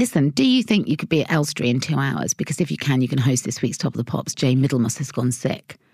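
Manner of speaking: ordinary delivery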